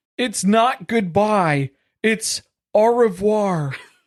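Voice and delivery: flirty, lilting high voice with lifted pitch. Reading Cody's flirting goodbye line aloud, as requested; Cody voice. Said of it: "I'm going to need you to do this in the Cody voice".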